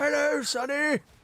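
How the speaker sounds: put-on very high, creaky old voice. Trying out an old man character and greeting someone, in old man voice. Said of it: "I could play this as an old man".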